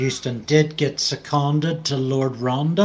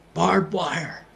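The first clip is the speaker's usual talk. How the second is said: put-on whisper, higher pitch; 4 semitones higher than usual. Retelling a soldier calling out sights on a march: retelling a whisper. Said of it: "why on earth were you whispering".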